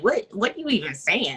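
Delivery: put-on nasty voice. Retelling a character's reaction: imitating a nasty retort. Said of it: "he was pretty nasty for a second".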